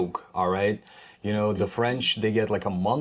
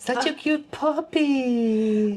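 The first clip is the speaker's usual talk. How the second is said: put-on very high, slow, stretched-out baby talk. Trying out the high-pitched way people talk to a puppy: imitating high-pitched baby talk. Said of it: "drive my voice to that pitch".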